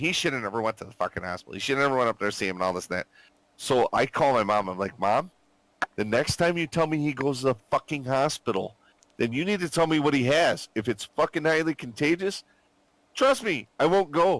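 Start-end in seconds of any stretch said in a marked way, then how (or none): 5.0-14.4 heated, angry scolding rant, pushed high. Speaker retells calling their mom about a hospital visit: retelling yelling at mom. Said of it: "I'm yelling at her".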